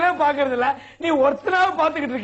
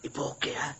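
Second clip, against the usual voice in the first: low, very soft, barely breathed hushed murmur. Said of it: "சத்தம் போட்டு பேசாதீங்க".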